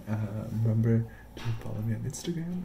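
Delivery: soft, hushed whisper.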